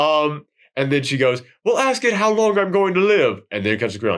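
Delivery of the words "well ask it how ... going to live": bad put-on British accent, higher. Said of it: "That's my horrible British accent".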